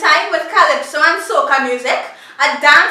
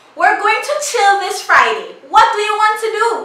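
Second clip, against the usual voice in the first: pitched-up American accent; 5 semitones higher than usual. Contrasting what an American and a Trinidadian would say: imitating an American. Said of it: "An American would say".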